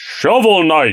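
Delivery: announcer delivery, like calling out a fighter's name. Asked by the other speaker to do the Smash announcer voice. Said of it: "Do the Smash announcer voice".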